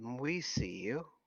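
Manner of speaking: gentle, soft, quiet, somewhat feminine voice. Voicing a voice echoing out of a cave: soft, sort of feminine voice. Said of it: "a soft, sort of feminine voice that says".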